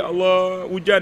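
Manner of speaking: slow, sorrowful, sad begging tone. Showing how to plead with allah in prayer: slow, sad, pleading prayer. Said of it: "Lepas tu kita slow pula sedih".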